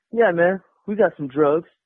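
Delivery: ordinary talk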